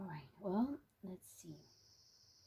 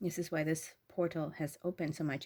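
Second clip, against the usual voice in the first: plain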